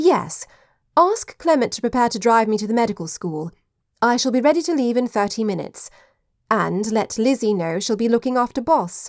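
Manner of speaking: plain reading voice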